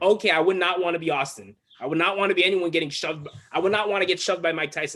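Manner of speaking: ordinary talk, nothing marked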